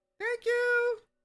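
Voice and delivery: very high-pitched creature voice. Before disappearing into the shadow, repeating what was just said, high-pitched voice. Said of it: "repeat what you said exactly in that high pitched voice".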